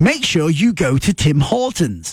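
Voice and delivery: put-on English accent in a radio-advert announcer read. Retelling a radio commercial heard at halftime: English accent. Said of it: "This was in an English accent".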